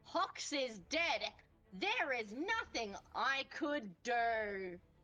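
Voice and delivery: theatrical, staged, drawn-out delivery. Announcing in character that a companion is dead: saying very loudly. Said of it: "And I say very loudly".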